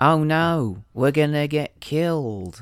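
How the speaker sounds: slow, flat, dead-level one-tone delivery. Imitating a film character suggesting a milkshake trip: monotone Goose impression. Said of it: "he's very one tone".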